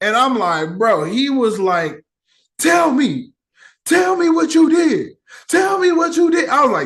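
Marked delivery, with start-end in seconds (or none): 2.6-6.5 put-on high, demanding, insistent yelling. Retelling how Captain America pressed the president: imitating Captain America yelling; imitating Captain America shouting; imitating a hero yelling. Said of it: "he was yelling at him".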